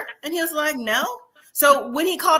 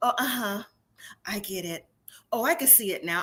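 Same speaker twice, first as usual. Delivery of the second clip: timid, meek and soft; 5 semitones lower, 8 dB quieter than usual. Imitating how he answered after being confronted: imitating a meek voice. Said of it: "kinda like a meekness".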